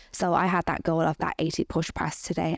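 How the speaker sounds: normal talking voice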